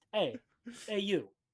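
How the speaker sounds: put-on gangster voice. Acting out a gun-waving thug confronting someone: mobster accent. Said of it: "a mobster accent the whole way through".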